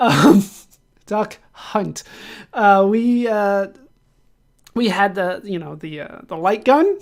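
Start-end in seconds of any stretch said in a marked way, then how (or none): 1.1-2.0 very slow, drawn out, breathy whisper, word by word. Naming a game the speaker has played a lot, very slow. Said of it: "I have to say it real slow".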